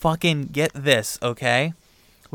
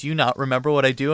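imitated angry voice. Retelling how the other person answered, imitating someone angry. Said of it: "really angry at me".

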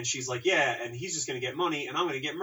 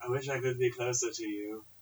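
loose, vague put-on sort-of British accent. Describing a movie scene of a couple in twin beds, voicing the wife: sort-of British accent. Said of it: "why does she sort of have a British accent".

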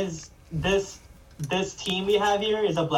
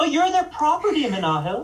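mocking, high-pitched voice. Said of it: "I had to say it like that because, because that's how they think".

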